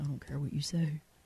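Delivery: very quiet, forced, as-deep-as-possible voice. Quoting a man known for his super deep voice, forced super deep voice. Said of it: "with his super deep voice, he'd be like, ... That's as deep as I can make my voice".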